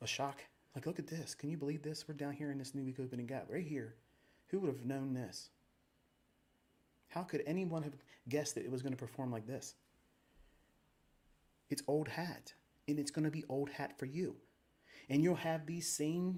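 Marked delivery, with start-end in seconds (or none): none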